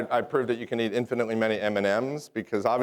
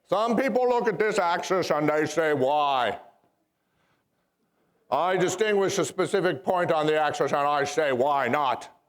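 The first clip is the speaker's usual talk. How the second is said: put-on Boston accent, pitched up high; 5 semitones higher than usual. Speaker does Robert Kennedy in geometry class: Robert Kennedy impression. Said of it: "my impression of Robert Kennedy in geometry class".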